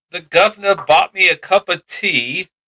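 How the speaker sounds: put-on British accent. Joking about an actor asking for tea, in a mock British accent. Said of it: "Can you get canceled for mocking the Brits?".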